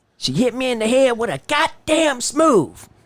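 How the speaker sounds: very high, hurt, pained man's voice. Speaker retells what a man said about being hit, imitating the man's voice. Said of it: "I'm going to try to do his voice".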